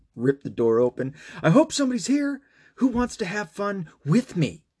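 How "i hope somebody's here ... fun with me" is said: very high scream at the top of the lungs. Retelling how he searched the house after his daughter's question: imitating a scream at the top of lungs. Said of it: "I just screamed at, like, the top of my lungs".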